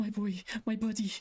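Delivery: sobbing, very high-pitched, tearful crying voice. Voicing a character who hugs a revived friend, crying while speaking. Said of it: "leant over you crying as this happened".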